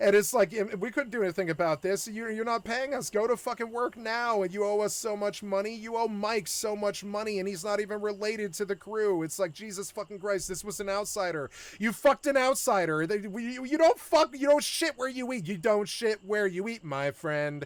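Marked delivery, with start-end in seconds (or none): none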